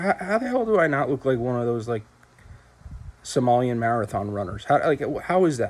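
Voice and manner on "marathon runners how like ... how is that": ordinary talk, nothing marked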